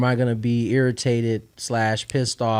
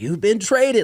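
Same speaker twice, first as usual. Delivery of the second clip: put-on, very high, thrilled and excited burst; 10 semitones higher, 3 dB louder than usual. Retelling a dad's early call about a trade: imitating dad's excited voice. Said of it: "you can hear, like, his, his excitement".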